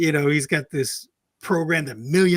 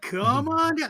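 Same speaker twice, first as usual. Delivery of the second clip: over-the-top, exaggerated radio DJ voice, very high; 11 semitones higher than usual. Recalling watching The Price is Right, inviting people down: Bob Barker impression. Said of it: "that exaggerated, almost D J voice".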